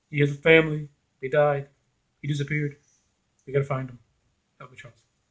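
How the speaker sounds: put-on deadpan delivery, flat and lifeless monotone. Mocking an actress's line delivery, mock Jennifer Lawrence flat delivery. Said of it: "her delivery for certain key scenes is just so like lifeless. It's so like deadpan".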